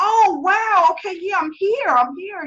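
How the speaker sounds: play-acted, thrilled, eager, high, drawn-out tone. Retelling a reply to a caller who watched for months: retelling own excited reply. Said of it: "and I'm excited".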